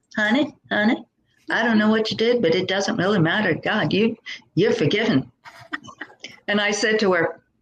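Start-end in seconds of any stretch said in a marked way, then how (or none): 0.1-5.3 put-on broad, thick Texas accent with heavy twang and drawl. Retelling what Tamara said to him, imitating Tamara's heavy Texas accent. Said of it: "this heavy Texas accent said to me".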